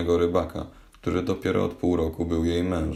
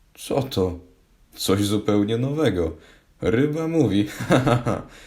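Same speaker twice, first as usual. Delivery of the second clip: high exclamation with words breaking into laughter; 5 semitones higher, 3 dB louder than usual. A narrator reads a fisherman reacting to a talking fish, laughing. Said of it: "zaśmiał się rybak".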